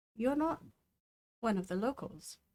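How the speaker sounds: under the breath. Voicing a character who looks at a stranger and speaks: speaking quieter. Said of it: "quieter this time".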